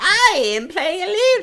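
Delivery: character voice, pitched very high and stretched out slowly. Imitating another player's voice from an early episode: imitating Eluja character voice. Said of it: "your Eluja voice back there was like".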